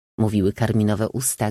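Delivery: plain reading voice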